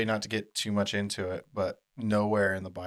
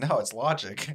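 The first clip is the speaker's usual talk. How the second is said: normal talking voice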